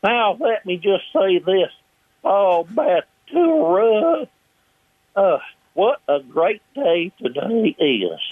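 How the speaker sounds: very high, slow, drawn-out, swooping voice. Showing how the voices were picked up: Pat Buttram as Mister Haney voice. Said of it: "I just picked up these voices".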